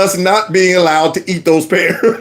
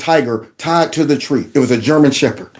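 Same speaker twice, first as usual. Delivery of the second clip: plain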